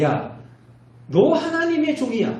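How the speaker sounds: stern, scolding tone.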